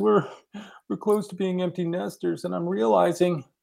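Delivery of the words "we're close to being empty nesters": speaking through tears. Retelling what she said to him, imitating her talking through tears. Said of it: "and through her tears".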